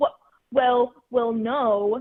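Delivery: loud, flustered stutter, tripping over words. Retelling how a guy reacted when called out: imitating a flustered stutter.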